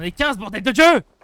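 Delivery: high, loud, excited screaming.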